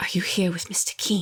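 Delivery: very hushed, kept low under the breath. A game master voices Nathaniel leaning close and grabbing a player's arm: Nathaniel in a hushed tone. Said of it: "he speaks in a very hushed tone".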